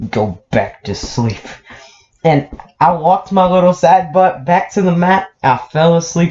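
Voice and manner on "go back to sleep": mock menacing voice, low and hushed. Retelling what she told the speaker after grabbing his arm: retelling a menacing voice. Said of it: "she says in the most menacing voice".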